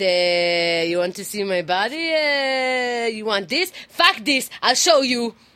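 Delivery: put-on high, loud Israeli accent. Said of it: "read this in an Israeli accent".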